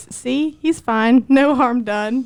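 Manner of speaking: slow, patronizing, condescending, dismissive tone. Retelling how Sean came back carrying the speaker's son, mimicking Sean's condescending tone. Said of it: "says in the most condescending tone of voice".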